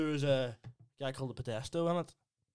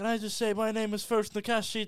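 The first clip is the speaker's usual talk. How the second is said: high, loud, smug mock actress voice. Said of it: "it's like her going".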